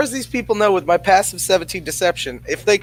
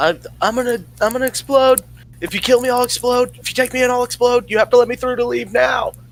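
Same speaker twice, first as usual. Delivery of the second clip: high-pitched shouting in a put-on character voice; 6 semitones higher than usual. Playing a character yelling a threat to escape guards: yelling in character. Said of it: "I'm yelling".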